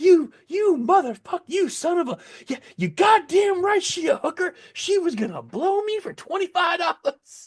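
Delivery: acted-out, very high, shrill, sputtering furious tirade. Retelling the man's reaction when caught: imitating a furious outburst. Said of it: "Dude lost his mind".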